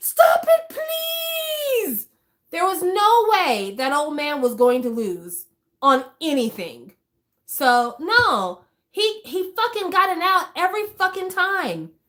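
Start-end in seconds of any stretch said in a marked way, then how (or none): 0.0-2.1 shrill, very high, drawn-out screaming. Retelling how the old man was pulled from the room: imitating someone screaming.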